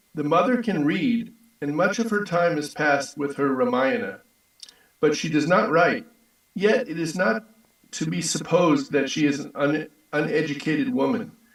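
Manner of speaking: ordinary talk, nothing marked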